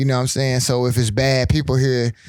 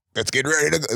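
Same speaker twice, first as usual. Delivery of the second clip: sports league commercial voiceover voice; 3 dB quieter than usual. Describing the league's commercial to another speaker: The Rock impression. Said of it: "it's The Rock's voice".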